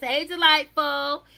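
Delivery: high-pitched, loud calling-out voice. Greeting a girl in a put-on voice: Nikki Parker voice. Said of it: "in my Nikki Parker voice".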